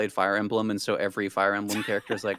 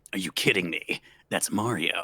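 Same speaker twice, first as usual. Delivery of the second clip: throaty video-game soldier voice pushed from the throat; 2 semitones lower than usual. Asked to try it, the speaker answers the Mario question in a Snake impression. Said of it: "do a pretty good Snake impression too".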